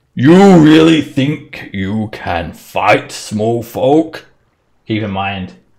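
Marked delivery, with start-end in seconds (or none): 0.2-4.3 loud, booming frost giant voice. Voicing a frost giant taunting a player who draws an axe: frost giant voice. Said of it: "he's only speaking in Giant".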